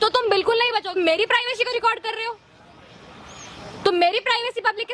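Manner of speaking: shouting angrily. Confronting the person recording on camera, shouting angrily. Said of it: "आप इतना चिल्ला क्यों रहे हो?".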